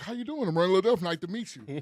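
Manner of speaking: mock-proper, stiff, buttoned-up, uptight tone. Retelling a first day in a professional job: imitating own uptight formal manner. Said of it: "I'm being all uptight".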